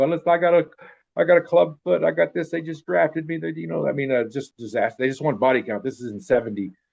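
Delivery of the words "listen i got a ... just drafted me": high, tearful, crying, pleading voice. Retelling how drafted kids came down crying: imitating crying draftees pleading. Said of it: "kids coming down there crying".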